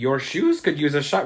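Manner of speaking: horrible, bad, put-on leprechaun-style Irish accent. Retelling what a leprechaun says after introducing himself, in a horrible Irish accent. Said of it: "please forgive my horrible Irish accent".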